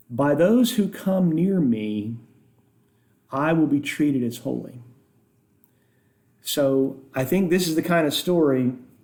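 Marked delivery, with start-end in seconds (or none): none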